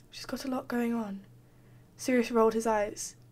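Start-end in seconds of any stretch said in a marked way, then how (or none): 0.1-1.2 mumbling, much quieter. Narrator reads one character's reply to his brother, mumbling.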